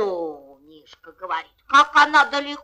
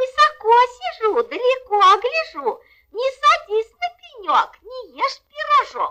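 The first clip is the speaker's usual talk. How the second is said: put-on tiny, thin, very high little-girl voice; 14 semitones higher than usual. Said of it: "тоненьким голоском".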